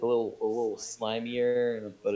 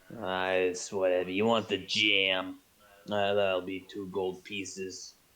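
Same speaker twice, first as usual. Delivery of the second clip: put-on voice of a very old man, lower; 4 semitones lower than usual. Voicing the jam seller answering a customer, eighty-year-old man voice. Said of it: "he speaks like an eighty year old man".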